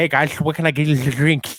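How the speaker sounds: loud, put-on nerdy character voice. A bartender retells greeting customers on nerd night at the bar, geek night voice. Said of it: "Like like talking like that".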